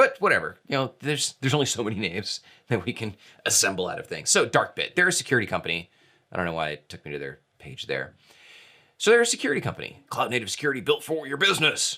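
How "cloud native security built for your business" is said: raw, dead-serious, stern military-style voice. Reading a security company's tagline aloud in a military voice. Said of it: "That's like my military voice or my like raw serious voice".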